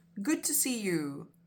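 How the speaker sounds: plain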